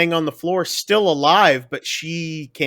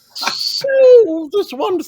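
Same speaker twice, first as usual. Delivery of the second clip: very high, whistling, whistly cartoon critter voice; 4 dB louder than usual. Praising an actor's southern accent, the speaker does a Gopher from Winnie the Pooh voice. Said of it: "like little whistle going".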